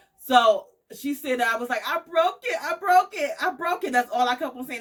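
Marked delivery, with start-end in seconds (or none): 1.9-3.9 put-on crying voice, higher. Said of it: "mid crying and saying".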